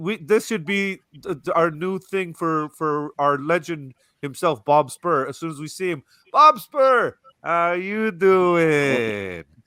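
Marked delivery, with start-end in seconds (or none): 6.3-9.4 high, slow, drawn-out delivery. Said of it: "that's how we should".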